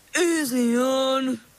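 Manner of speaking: high, swampy eel-like creature voice. An eel answers as the bell is pulled harder; swampish voice. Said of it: "he said in a swampish voice".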